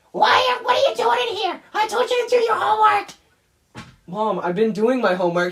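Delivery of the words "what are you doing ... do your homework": witchy, nagging voice, pitched very high. Describing a video where they played a stereotypical cartoon mother, in a witch-like cartoon mother voice. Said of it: "me doing this witch-like voice".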